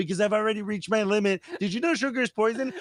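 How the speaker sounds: high, squeaky mock frog voice.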